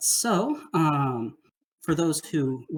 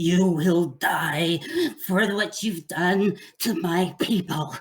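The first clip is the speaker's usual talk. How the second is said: snarling villain voice throughout; 3 semitones higher, 3 dB louder than usual. Voicing the Rat King threatening a player's character: snarling Rat King. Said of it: "the Rat King snarls and says".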